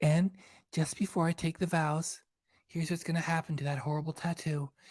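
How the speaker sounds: soft, cutesy, put-on little baby-talk voice. Imagining what a bride on television should have said, in a baby voice. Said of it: "she should have said it in her baby voice".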